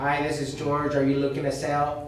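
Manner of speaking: very low, flat, mechanical, robotic computer monotone. Showing how not to sound when reading a sales call script: flat, robotic delivery. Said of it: "you're like a computer. You know what I mean? ... You don't want to sound like that".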